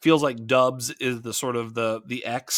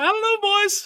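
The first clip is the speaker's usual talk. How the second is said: put-on sportscaster voice, pitched much higher; 5 dB louder than usual. After praising a co-host's version, the speaker tries it too: Tony Romo impression. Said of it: "Sound like Tony Romo".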